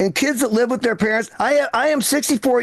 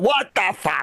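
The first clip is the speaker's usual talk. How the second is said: put-on old man voice; 3 semitones lower than usual. Imitating an elderly father-in-law who walks around all day: imitating elderly father-in-law. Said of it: "That's all he says all day long".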